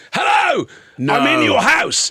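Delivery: high, swooping shout at full voice. Retelling a stranger at the letterbox: imitating a man shouting. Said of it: "a guy shouting through my letterbox".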